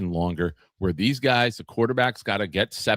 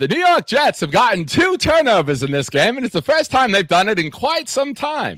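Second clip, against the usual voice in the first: put-on very high, old-time 1920s baseball announcer voice; 13 semitones higher, 7 dB louder than usual. Calling a New York Jets game on a stream: 1920s baseball announcer voice. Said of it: "I went a little bit too much nineteen twenties baseball announcer".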